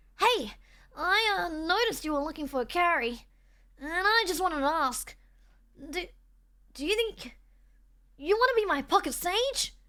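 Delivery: effortful, throat-straining put-on character voice, pushed until painful. Trying out a line that Kingdom put in for you to do, in an extra Emily voice. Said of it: "It does hurt to do her voice".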